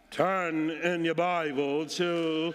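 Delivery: church pulpit sermon voice. Mocking preachers who switch voices in the pulpit, in a preacher's pulpit voice. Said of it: "they come with this different voice".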